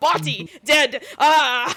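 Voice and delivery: mock frantic, loud panicked exclaiming. Retelling the shroom neighbor's frantic signing: imitating frantic panic. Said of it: "signing frantically".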